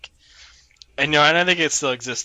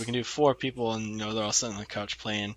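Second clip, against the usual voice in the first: normal talking voice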